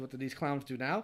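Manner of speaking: normal talking voice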